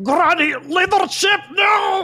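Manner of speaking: gurgling scream with water in mouth. Playing a character sinking in water, screaming with water in mouth. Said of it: "I'm just screaming with, like, water in my mouth".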